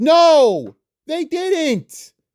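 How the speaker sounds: shrill, all-out, very high, drawn-out screaming. Ranting about how people really act, screaming. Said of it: "You see why I'm screaming".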